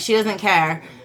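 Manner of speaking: ordinary talk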